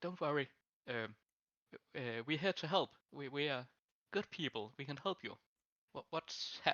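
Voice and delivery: hushed, toned-down voice. Role-playing a character who approaches a woman after shouting, in a lowered voice. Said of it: "lower my voice like".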